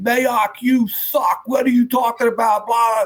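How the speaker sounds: put-on shrill scream, pitched very high. Retelling an offensive lineman screaming at him during a live broadcast: imitating someone screaming. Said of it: "this kid screaming at me".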